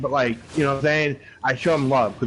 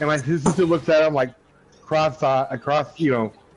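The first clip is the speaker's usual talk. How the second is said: plain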